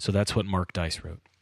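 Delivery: ordinary talk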